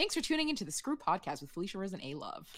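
very fast, sped-up, rattled-off read, like fast forward. A podcast co-host reading the sign-off, very fast delivery. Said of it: "You said that so fast".

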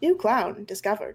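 put-on robotic monotone voice. A machine turns straight at the listener and announces, monotone AI voice. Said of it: "with like a monotone, sort of like AI sounding voice".

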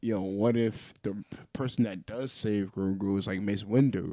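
ordinary delivery

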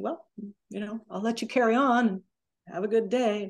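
normal talking voice

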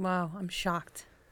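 soft, slow sarcastic deadpan.

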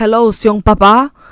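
flirty street-corner catcalling come-on tone. Retelling how men on the corner call out, imitating men catcalling. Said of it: "trying to catcall me".

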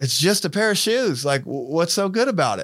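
put-on Kentucky accent. Quoting a woman who questions his paper topic, the speaker imitates her Kentucky accent. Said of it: "her Kentucky accent".

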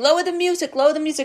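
put-on high, nagging yelled call. Retelling how a mom kept telling her child to turn it down: imitating mom yelling. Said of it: "my mom would be yelling".

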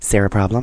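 American accent, shop-manager style. Saying a name like a manager at a shop: american accent like shop manager. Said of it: "you have to say it in an American accent, and you have to say it like, you know, like a manager at a shop".

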